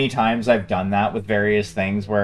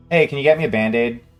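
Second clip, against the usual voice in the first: mock cool, completely calm, unbothered delivery; 4 semitones higher than usual. Retelling asking the bartender for a Band-Aid after a cut: imitating own calm voice. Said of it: "just completely calmly, like, nonplussed".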